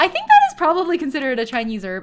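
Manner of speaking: voice rising way up. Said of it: "my voice just went all the way up".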